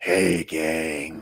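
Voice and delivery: put-on sexy, raspy voice. Looking at comic books with a friend, imitating a sexy raspy voice. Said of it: "that sexy, raspy voice".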